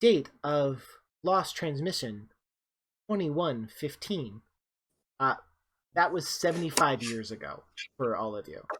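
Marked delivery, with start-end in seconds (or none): 0.0-4.4 onboard ship computer announcement voice. Voicing the ship's computer answering a request to repeat: voicing Mother, ship computer. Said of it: "Mother comes in, she's like".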